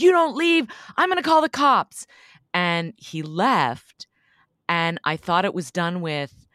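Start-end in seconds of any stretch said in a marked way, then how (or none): 0.0-2.1 mock shrill, very high, loud, rushed yell. Recalling yelling through the slats at a man to make him leave, retelling a yell. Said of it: "I just yelled like".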